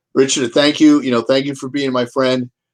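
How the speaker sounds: plain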